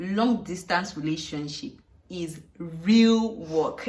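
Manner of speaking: slow, with hard stress on real.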